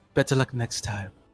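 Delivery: low half-whispered aside. A player speaking as their character while walking past someone, half-whispering. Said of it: "just whisper".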